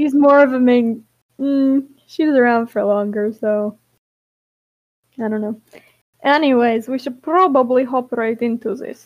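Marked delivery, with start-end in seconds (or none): 6.2-9.1 abrupt switch to Russian accent. Moving on to get started, as another person remarks: sudden Russian accent. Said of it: "With the Russian accent all of a sudden".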